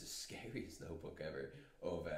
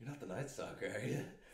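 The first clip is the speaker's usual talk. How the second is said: light, teasing, joking tone with raised pitch; 5 semitones higher than usual. Retelling a story, the speaker voices a police officer chatting with a man, retelling a joking question. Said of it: "the police officer goes jokingly to him".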